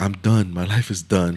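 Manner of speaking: put-on crying speech. Retelling what she said while crying, imitating someone crying. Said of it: "She was crying".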